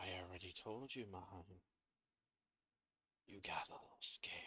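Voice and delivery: faint, very hushed whispered voice. Voicing an unseen speaker whispering to Braden: whispering voice. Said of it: "You hear a whisper".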